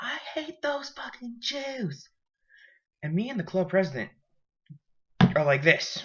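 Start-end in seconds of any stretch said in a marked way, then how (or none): 0.0-2.1 abrupt, sudden, very high-pitched screamed outburst. Retelling what a girl screamed during a movie: imitating someone screaming. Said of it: "she literally just screams".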